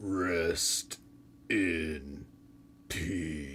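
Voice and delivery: very low, hushed, quiet, drawn-out "in". Performing a wrestler's catchphrase when asked: Undertaker impression. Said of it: "let me try a "Rest in Peace."".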